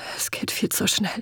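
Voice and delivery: whispered, hushed, soft and breathy. Head hanging after a harsh reply, a character answers his companion, whispered. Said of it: "flüsterte er".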